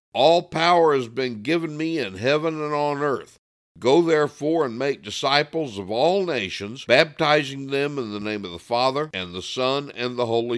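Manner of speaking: plain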